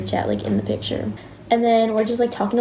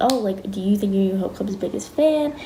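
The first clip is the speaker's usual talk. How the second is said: ordinary talk, nothing marked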